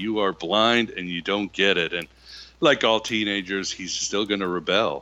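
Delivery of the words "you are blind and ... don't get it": ordinary talk, nothing marked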